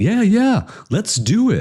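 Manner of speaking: very high, casual, easy tone, pitched way up. Retelling how the man they had to convince said yes; imitating the older guy agreeing. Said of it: "he's like he's like".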